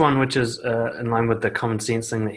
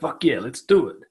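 mock pumped-up motivational voice; 2 semitones higher than usual. Acting out the inner voice of fear: imitating a motivational voice. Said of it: "sounds like you got this motivational voice".

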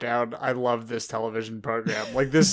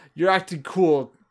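put-on drunk man yelling, much higher pitch; 5 semitones higher, 3 dB louder than usual. Retelling what a drunk man yells at someone, retelling a drunk yell. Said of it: "Like he yells".

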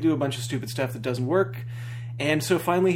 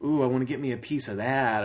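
put-on sleazy, suggestive, leering, lustful tone. Mocking how a show character talks while staring at a man: mocking a leering line. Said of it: "And why is he talking like".

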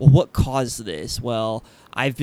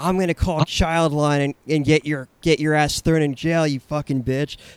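put-on bratty child screaming floor tantrum; 3 semitones higher than usual. Retelling how kids in a facility screamed at helpers: imitating kids screaming. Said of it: "They'd lay on the ground screaming".

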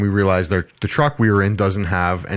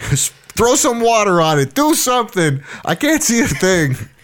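very high-pitched screaming; 12 semitones higher than usual. Retelling being blinded while driving, screaming at the passenger: imitating own past screaming. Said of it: "So I'm screaming at the guy".

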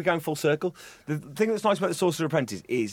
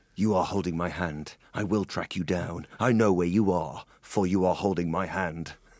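lower, put-on Irish film-star voice; 9 semitones lower than usual. Joking with the others, doing a Liam Neeson impression. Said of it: "That was my Neeson impression".

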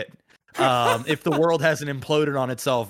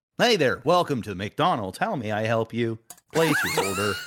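automated robotic voice. Talking about automated fast-food counters, speaker imagines a robot cashier, robot voice. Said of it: "you're gonna be talking to a robot".

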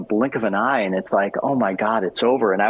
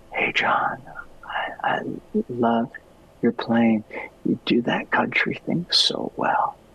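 barely-there, really soft whispered voice; 6 semitones higher, 3 dB quieter than usual. Retelling meeting a masked musician: imitating someone talking really soft. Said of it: "he talked really, really soft".

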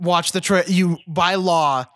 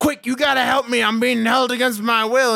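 mock-screamed, desperate, put-on scream; 5 semitones higher than usual. Telling a story about a man in a straitjacket on a bus, retelling a desperate scream. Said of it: "in a straitjacket screaming".

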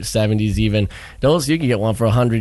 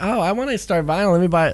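put-on teasing, derisive, pitched-up girl voice; 9 semitones higher than usual. Speaker retelling what a girl recently said to them, mockingly imitating her. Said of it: "sorry to do that voice".

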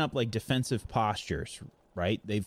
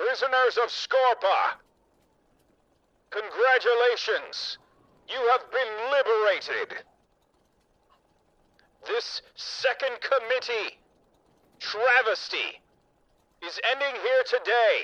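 magnified loudspeaker announcer voice, higher; 12 semitones higher, 3 dB louder than usual. Voicing an announcement to liberated prisoners: magnified loudspeaker voice. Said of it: "a magnified voice come across and say".

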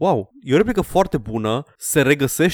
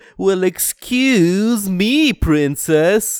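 drawn-out, slow cartoon voice, pitched up high; 6 semitones higher than usual. Quoting a nineties cartoon line: cartoon Link voice. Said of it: "Și Link era la fel".

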